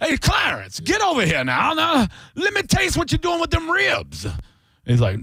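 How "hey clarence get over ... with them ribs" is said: very high, sing-song, swooping put-on voice. Acting out a slave owner smelling barbecue: acting as a slave owner. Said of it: "then the slave owners are like".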